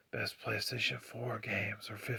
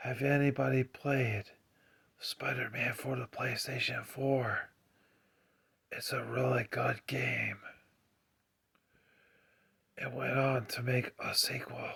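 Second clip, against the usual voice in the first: quiet whispering; 3 dB louder than usual. Talking about video games in an ASMR video: whispering. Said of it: "I am whispering right now".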